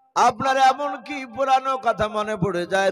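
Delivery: calling out loud.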